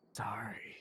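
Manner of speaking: soft, breathy whisper under the breath. Playing Itachi, who nods to Lo and apologizes: whispering as Itachi. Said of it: "Itachi nods as he whispers to Lo".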